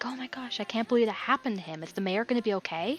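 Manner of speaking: worried, hushed whispered crowd chatter. Narrating concerned villagers crowded around, voicing them as worried villagers whispering. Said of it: "you hear whispering like".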